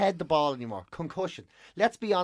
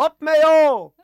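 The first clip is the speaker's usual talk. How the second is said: shrill, very high, very loud shouting yell; 10 semitones higher, 13 dB louder than usual. Comedian retelling an audience member who kept shouting during a show: imitating someone shouting. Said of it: "kept shouting".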